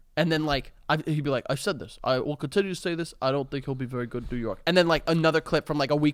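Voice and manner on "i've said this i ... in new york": dropped, deep commentator voice. Retelling a clip of a New York sports broadcaster: Mike Francesa impression. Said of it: "it's basically him saying".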